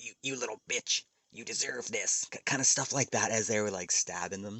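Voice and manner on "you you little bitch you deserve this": sinister, taunting, put-on creepy killer voice. Describing a show's killer taunting a young woman, in a creepy killer voice. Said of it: "in this creepy voice".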